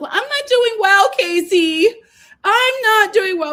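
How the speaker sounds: play-acted very high, quavering, tearful cry. Retelling how Anaya answered when asked how she was: imitating Anaya's tremble cry. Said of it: "she starts to do, like, the, uh, tremble cry again".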